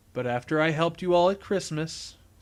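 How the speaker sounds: plain reading voice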